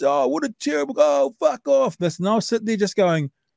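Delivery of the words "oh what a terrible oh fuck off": put-on scream, higher. Retelling a mate's outburst at a halftime host at a rugby game: imitating someone screaming. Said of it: "my mate was screaming out".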